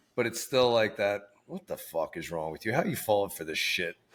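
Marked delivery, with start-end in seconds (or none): 1.5-4.0 put-on tough East Coast attitude. Acting out the East Coast vibe just described: imitating East Coast attitude. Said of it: "Kinda attitude".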